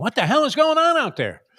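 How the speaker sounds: high loud coach scream.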